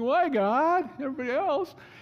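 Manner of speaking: mock whine, very high and loud. Recalling complaining to God, retelling own whining. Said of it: "I'm whining".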